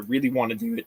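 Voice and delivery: cracking, breaking voice. Speaker talks about future plans, voice cracking. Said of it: "Voice crack".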